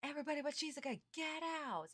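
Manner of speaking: high mock scream, yelling.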